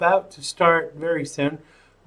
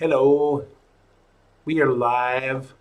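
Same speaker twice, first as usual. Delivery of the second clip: put-on Southern accent, drawling; 4 semitones lower than usual. Host opening the live show, in a put-on southern accent. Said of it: "I go into this southern accent".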